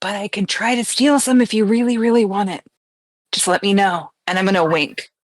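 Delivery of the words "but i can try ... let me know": sly stage whisper aside. Playing a character who leans to a friend, in a stage whisper. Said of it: "kinda stage whisper".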